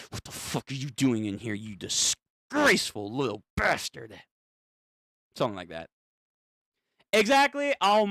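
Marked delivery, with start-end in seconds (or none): 0.1-4.1 acted furious man voice. Speaker guesses how Johnny's dad will react, imitating an angry father. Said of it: "his dad's gonna be like".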